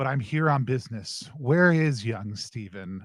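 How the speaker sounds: very solemn, grave, weighty tone. Voicing Miss Claus arriving at the office: very solemn voice. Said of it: "a very solemn".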